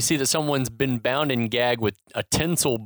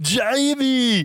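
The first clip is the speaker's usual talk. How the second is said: put-on heavy Austrian accent, higher pitch; 11 semitones higher, 4 dB louder than usual. Recapping a film scene, calling out the kid's name: heavy Austrian accent as Howard Langston. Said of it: "It's a heavy Austrian accent".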